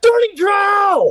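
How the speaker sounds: loud screaming. Answering what the character screams to get attention: screaming in character. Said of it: "I'm gonna scream".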